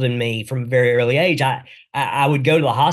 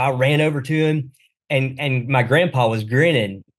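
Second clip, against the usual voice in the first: ordinary talk, nothing marked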